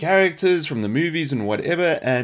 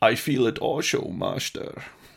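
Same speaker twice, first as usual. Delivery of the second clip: put-on Scottish accent; 2 semitones lower, 4 dB quieter than usual. Imitating a game's unit voice line: weird Scottish Obi-Wan Kenobi voice. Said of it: "weird Scottish Obi-Wan Kenobi".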